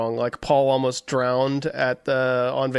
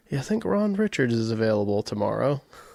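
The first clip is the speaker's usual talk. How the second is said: put-on little whisper; 2 semitones lower than usual. Retelling a joke from a session rehearsal, imitating George whispering. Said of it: "he goes to, like, a little whisper".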